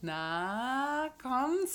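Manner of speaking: ironic, teasing tone.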